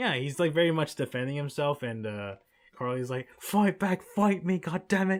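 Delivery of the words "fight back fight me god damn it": put-on pitched-up British accent. Describing how Carly reacts when Sam won't fight; Carly in a British accent. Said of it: "It's a good accent".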